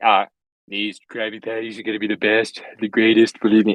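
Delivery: proud, boastful tone, attempted voice off target. Reading a script aloud, Trump proudly flipping Krabby Patties: Trump impression sounding like JFK. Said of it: "I just sound like J F K".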